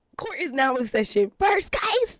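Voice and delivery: strained shouting. Opening a mock court session and announcing the first case: trying to yell. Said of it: "I can't even yell the way I want to".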